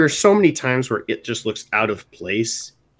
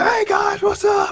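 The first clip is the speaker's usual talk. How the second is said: acted-out loud burst, very high, slow, drawn-out. Imitating another speaker's opening greeting: imitating a loud burst-out greeting. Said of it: "busting out of the gates".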